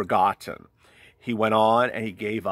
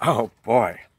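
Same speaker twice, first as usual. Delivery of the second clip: touched, emotional, feeling audibly showing through. Reacting to a viewer's message just read aloud: emotional. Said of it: "Sorry to get emotional on you".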